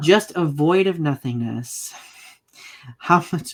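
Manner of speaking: solemn reading with stifled laughter underneath. Reading dramatic verse lines aloud, holding back a laugh. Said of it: "I'm trying not to laugh".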